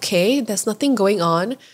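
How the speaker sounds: normal talking voice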